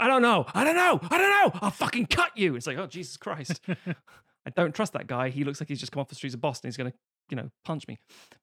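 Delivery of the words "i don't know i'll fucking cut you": mock scream, higher, louder, slower. Comparing the Bourne films' actors, acting out Jeremy Renner screaming. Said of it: "Jeremy Renner screaming".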